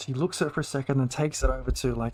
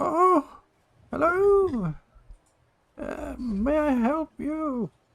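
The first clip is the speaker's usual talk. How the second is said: put-on very high old woman voice; 4 dB louder than usual. Narrating a scene, voicing an old woman who opens the door: old woman voice. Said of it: "this old, old woman turns to face you. She goes".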